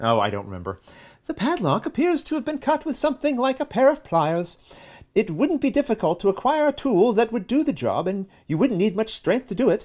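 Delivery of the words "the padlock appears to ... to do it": very high female character voice. Reading out a character's lines aloud, in a female character voice. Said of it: "I think you did her voice before".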